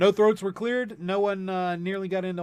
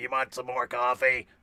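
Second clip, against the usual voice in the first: put-on low, sixty-year-old chain-smoker's truck stop waitress voice; 6 semitones lower than usual. Describing how sick they sounded last week: smoking truck stop waitress voice. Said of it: "I sounded like a smoking truck stop waitress".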